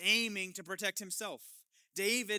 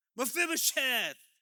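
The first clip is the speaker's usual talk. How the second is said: thrilled, excited, eager calling out; 4 semitones higher, 4 dB louder than usual. Reading a scripture line aloud, calling out a name: excited exclamation. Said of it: "You gotta, like, get excited".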